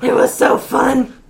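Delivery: booming, loud, high, wicked evil villain voice. Asked how she felt about a dance game, answering in an evil voice. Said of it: "She went into evil voice mode".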